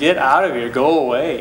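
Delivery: normal talking voice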